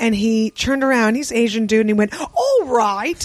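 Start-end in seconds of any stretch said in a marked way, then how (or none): 2.2-3.3 put-on heavy British accent, laid on. Retelling what a man at an English payphone said: imitating a thick English accent. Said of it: "he had a thick ass, like".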